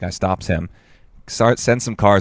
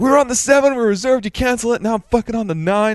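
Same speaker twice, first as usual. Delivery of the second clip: furious, ranting, very high-pitched angry yell. Retelling an angry customer at a ferry office: imitating a man yelling. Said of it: "there's already a dude yelling at him".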